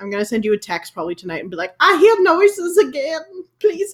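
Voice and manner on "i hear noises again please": very high, slow, frightened Southern drawl. Speaker acts out a text she'll send her friend tonight, mock-scared Southern drawl. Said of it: "I don't know why I have an accent now".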